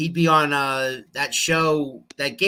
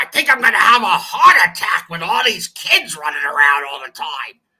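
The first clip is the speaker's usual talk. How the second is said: loud, crazed, wild, raspy voice; 3 semitones higher, 5 dB louder than usual. Describing a comedian's voice, then imitating it: Gilbert Gottfried impression. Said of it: "That was my best Gilbert Gottfried".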